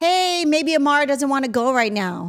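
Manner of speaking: put-on sweet voice. Acting out what they'd say to a bully: acting out a sweet tone. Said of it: "she wouldn't say that sweet".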